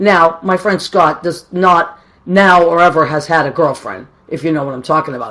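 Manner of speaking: ordinary talk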